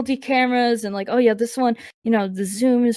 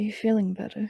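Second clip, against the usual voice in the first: soft, low, hushed whisper; 8 dB quieter than usual. Checking on another character quietly while nudging them: low whisper. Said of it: "low, in a whisper".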